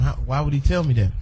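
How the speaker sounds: ordinary talk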